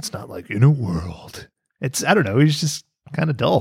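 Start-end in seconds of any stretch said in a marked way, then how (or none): 0.5-1.5 deep, epic movie-trailer voiceover announcer voice. Showing what a typical movie trailer opening sounds like: movie trailer guy voice. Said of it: "the trailer guy voice".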